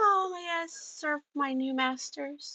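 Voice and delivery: meek and humble, soft, high voice. Narrator voicing Kit as she walks up to the group, humble and meek. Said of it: "very humbly and meekly she says".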